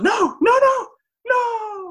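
very high, slow, drawn-out crying whimper. Retelling the scene where Woody tries to light Buzz's rocket, imitating Woody whimpering. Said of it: "And like whimpering on".

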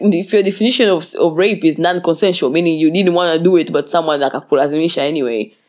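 normal talking voice

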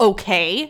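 curt, annoyed, openly hostile. Retelling a reply to a stranger who startled her: imitating own hostile okay. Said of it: "this is how I said it".

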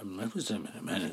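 muttering indistinctly. Acting out a man at a doorway answering a police officer, mumbling. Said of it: "He literally starts mumbling".

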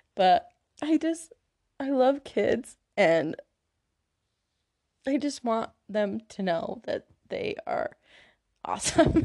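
crying while talking. Explaining why looks do not matter, crying while talking. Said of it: "I'm, like, crying".

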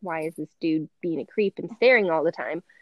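ordinary delivery

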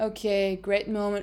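mock flat, level voice. Describing a racing driver on the radio, Oscar Piastri monotone impression. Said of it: "being fucking monotone on the radio and being like".

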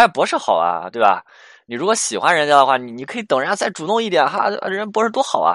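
snide, mock jealous needling. Retelling how an angry boyfriend answers: imitating sarcastic jealous remarks. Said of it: "气得开始说一些阴阳怪气的话了".

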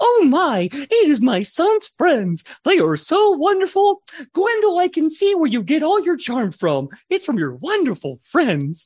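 very high-pitched motherly character voice. Voicing a mother who greets her son's friends: voicing Gwendol's mom. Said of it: "she picks up her face and she goes".

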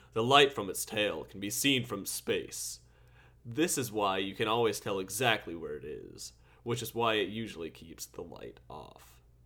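put-on broadcast announcer delivery. Asked what purpose it has, answering in a put-on announcer voice. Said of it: "let me get on my announcer voice".

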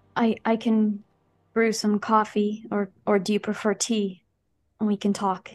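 heavy-hearted, sad, sorrowful voice. After lowering her gun, a woman offers the visitors a drink: sad voice. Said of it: "She says in a sad voice".

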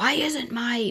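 put-on high, furious, angry screaming. Retelling how a man screamed at the speaker, imitating a man screaming. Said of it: "he's screaming at me".

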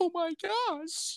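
very high, shocked, scandalized, prudish exclaiming. Impression of people who throw hissy fits over cursing: mock-scandalized. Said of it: "That's my impression of people that have hissy fits when people curse".

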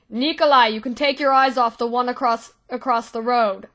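loud shouting, calling out upward. In a role-play, a character shouts up to the rafters to nikolai: shouting up. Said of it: "as he shouts up".

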